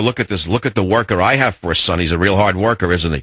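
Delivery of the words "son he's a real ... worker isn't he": ordinary talk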